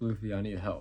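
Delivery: put-on crying, tearful pleading voice. Retelling an anime scene where she begs Luffy, imitating a crying plea. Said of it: "And she's like crying".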